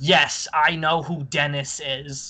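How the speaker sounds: very slow, very angry delivery. Retelling a movie scene with Naomi Watts: imitating Naomi Watts angrily. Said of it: "she very angrily goes".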